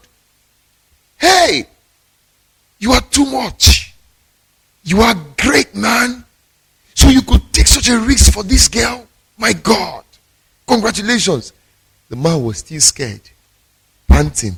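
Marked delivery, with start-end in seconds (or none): 1.2-11.5 high-pitched screaming, yelled. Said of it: "were screaming aloud".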